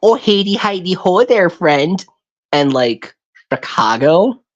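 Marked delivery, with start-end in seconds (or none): 0.0-2.0 exaggerated, folksy, put-on country Arkansas accent, pitched up. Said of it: "super, like".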